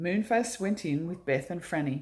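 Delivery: ordinary delivery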